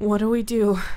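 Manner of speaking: voice thick with fear, fearful and frightened. A narrator reads a woman asking the narrator what to do: fearful voice. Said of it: "The fear was thick in her voice".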